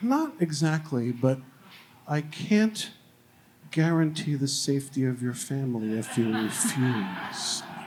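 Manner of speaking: icy, very cold, slow delivery. Retelling what Janet said when asked about pickleball, imitating her very cold voice. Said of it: "in a very cold voice".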